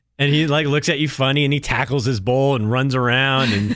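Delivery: ordinary delivery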